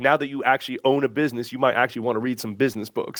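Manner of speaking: put-on drawn-out, drawling Kentucky accent. Retelling what a business coach jokingly said: Pat Rigsby's Kentucky drawl. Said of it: "in his Kentucky drawl".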